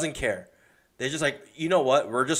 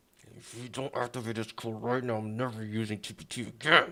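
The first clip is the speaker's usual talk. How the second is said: through gritted teeth, much quieter; 2 semitones lower, 6 dB quieter than usual. Demonstrating the tone to use for a demand, through gritted teeth. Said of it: "you gotta like say it through your teeth".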